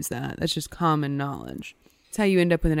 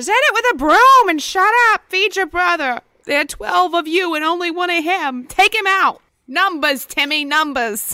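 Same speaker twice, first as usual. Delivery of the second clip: mock angry scolding yell, very high and very loud; 14 semitones higher, 9 dB louder than usual. Playing a mother answering her child about the Jersey Devil, angry mother voice. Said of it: "Just an angry mother accent was what I was going for".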